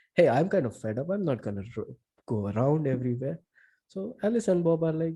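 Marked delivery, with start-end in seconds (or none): none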